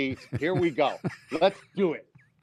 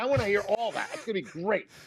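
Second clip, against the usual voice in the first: ordinary delivery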